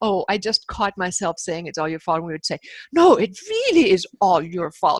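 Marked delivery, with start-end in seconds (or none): 2.9-5.0 over-the-top put-on accusing tone, swooping pitch. Recounting a habit of catching themselves blaming the other person; exaggerated mock-blaming. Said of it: "say it in an exaggerated way".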